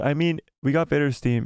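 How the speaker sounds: plain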